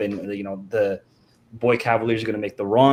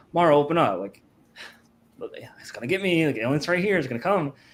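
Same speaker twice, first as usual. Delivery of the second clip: play-acted nonchalant, offhand, pitched-up delivery; 5 semitones higher than usual. Retelling a scene where a girl slams on the glass: imitating a nonchalant plea. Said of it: "real nonchalant about it".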